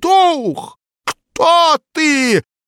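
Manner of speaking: shaking, trembling cry pitched very high. Pavel Petrovich calls out to the knocking spirit at a séance, trembling shout. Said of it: "Дрожащим голосом выкрикнул Павел Петрович".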